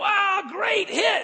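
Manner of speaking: acted-out, very high-pitched screaming cheer. Retelling a coach praising a hit at practice: imitating a coach yelling. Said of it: "the coach was yelling and screaming".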